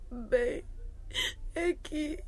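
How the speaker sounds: breathy, tearful whisper through crying. Teresa, asked by the others why she is crying, starts to answer, crying. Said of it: "Por que é que estás a chorar".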